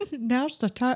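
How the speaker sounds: put-on Irish accent. Told to redo the line in an Irish accent, saying it in an Irish accent. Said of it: "you have to do it in an Irish accent".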